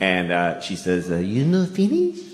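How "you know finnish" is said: put-on, pitched-up Japanese accent. Retelling what the Japanese waitress said to him, in a Japanese accent. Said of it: "I have to do the accent".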